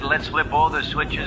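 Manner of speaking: ordinary talk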